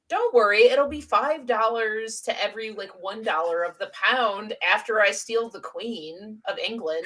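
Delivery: ordinary delivery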